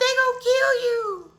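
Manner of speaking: mock crying little-kid voice, very high-pitched, tearful. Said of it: "so I'm crying".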